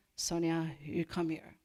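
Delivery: put-on French-accented English. Quoting what a man said to her, in his french accent. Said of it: "he said in his French accent".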